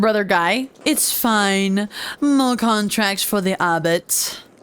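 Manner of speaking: ordinary delivery, nothing marked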